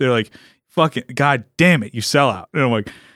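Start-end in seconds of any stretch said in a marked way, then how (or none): 0.7-2.5 put-on pissed-off, angry cursing rant. Retelling what angry Spanish speakers say to them: imitating an angry man. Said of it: "they get pissed".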